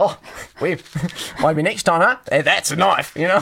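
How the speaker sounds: poorly done put-on Australian accent. Improvising a bit with another speaker, in a bad australian accent. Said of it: "letting my bad Australian accent slip".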